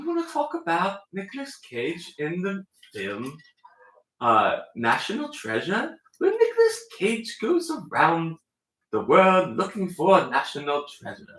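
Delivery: put-on mid-Atlantic accent. Pitching a film topic to the others, in a mid-Atlantic accent. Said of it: "Now I'm like sort of like a mid-Atlantic".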